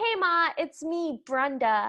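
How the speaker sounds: put-on slow, drawn-out, plainly non-British accent. Quoting a woman calling her mom, in a distinctly not British accent. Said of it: "in a distinctly not British accent".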